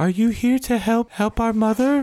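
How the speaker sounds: put-on very high-pitched small young boy's voice. Game narrator voices a boy heard from behind the players, little boy's voice. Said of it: "you hear a little uh, boy's voice say".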